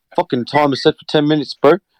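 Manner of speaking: put-on South African accent, voice-assistant style. Showing how they want the South African one to sound, South African accent. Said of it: "you just want the fucking South African one to be like".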